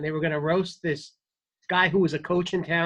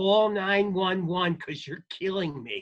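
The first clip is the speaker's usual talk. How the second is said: put-on mild, drunken hollering yell; 3 semitones higher than usual. Retelling an audience member at a roast: imitating a drunk man screaming. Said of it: "he's screaming in my face".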